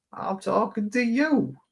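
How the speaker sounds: put-on Southern accent, pitched very high. Retelling how they answered a disrespectful woman, the speaker does a southern voice. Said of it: "I did the Southern voice".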